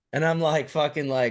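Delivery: ordinary talk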